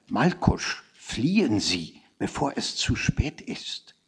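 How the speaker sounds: gentle, friendly, kind, slow whisper. Feeling almost sorry for him, the narrator answers a man, in a kind whisper. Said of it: "flüsterte ich freundlich".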